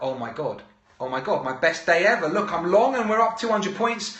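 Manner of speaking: excited, joyful voice. Retelling a trader's reaction to a sudden market rise: imitating someone overjoyed. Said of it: "she's like".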